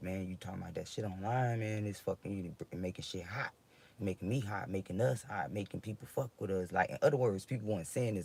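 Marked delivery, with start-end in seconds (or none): none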